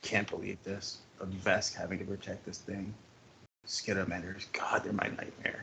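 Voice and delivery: hushed, very quiet under-breath grumbling mutter. Game master voicing Fang, sitting and staring at a player: Fang muttering under his breath. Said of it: "he's muttering".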